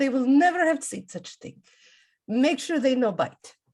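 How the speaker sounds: terrible attempted put-on French accent. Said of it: "trying to speak in a French accent".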